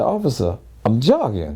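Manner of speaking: ordinary talk, nothing marked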